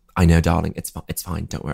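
bad put-on British accent. Describing a cruel scene, the speaker quotes a fellow actor reassuring them: terrible British accent. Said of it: "It's a terrible British accent".

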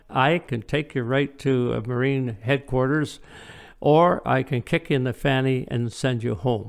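ordinary talk

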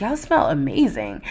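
quiet, soft, hushed whisper. Retelling complimenting two women the speaker stood behind: retelling a whisper. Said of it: "So I whispered to them".

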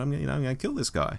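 very quietly. Retelling what a companion said after taking the doctor aside, very quietly. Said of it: "very quietly said".

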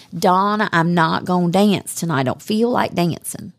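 put-on American Southern accent. Recalling what the speaker's wingman always said, imitating Jay's Southern accent. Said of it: "he had the best Southern accent".

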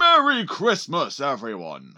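put-on loud old man voice with swooping pitch. Practicing to play Santa for the kids, speaker greets everyone in Santa voice. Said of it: "practice my Santa voice".

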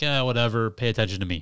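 usual speaking voice

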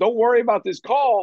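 play-acted high scream. Recounting a play with a flag, retelling screaming at him. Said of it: "screaming at him".

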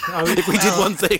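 laughing loudly, high pitched.

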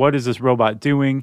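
ordinary talk

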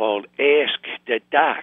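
exaggerated Chicago accent. Announcing the name of a new segment: strong Chicago accent. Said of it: "you really accentuated the Chicago accent right there".

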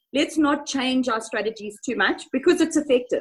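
usual speaking voice

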